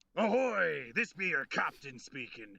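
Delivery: pirate voice with a long, drawn-out "ahoy". A captain's announcement for International Talk Like a Pirate Day, in a pirate voice. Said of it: "your captain be speaking like a pirate".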